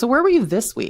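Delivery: put-on accusing, pointed tone. Retelling a parent's question about her week: imitating a judgmental tone. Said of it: "it's just the tone".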